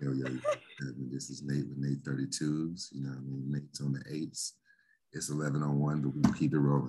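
smooth, jazz-radio announcer style voice.

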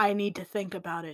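very deep, dropped, put-on voice. Voicing the owner who says he needs to think: very deep voice. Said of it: "in a very deep voice".

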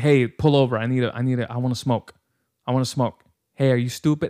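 put-on aggressive, ranting woman's voice. Retelling a woman on a bus demanding a smoke stop: imitating an aggressive woman. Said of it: "she has a very aggressive tone to her".

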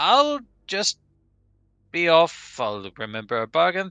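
loud high-pitched vampire voice.

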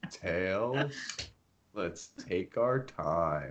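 very slow, very soft, low, lazy drawl. Joking about Sonic talking slow, speaking to Tails: slow-talking Sonic voice. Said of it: "Wouldn't it be weird if he talked slow?".

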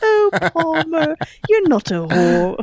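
sing-song put-on British accent, very high, very slow, swooping. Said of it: "doing her British accent".

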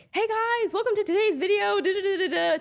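very high, loud, fast, booming, rattled-off delivery. Imitating YouTubers' video intro: imitating a YouTuber intro, fast and loud. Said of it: "talking really fast, really loud".

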